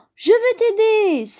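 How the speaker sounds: very high eager exclamation. Little Bear answers Big Bear, exclaiming. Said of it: "s'écria Petit Ours".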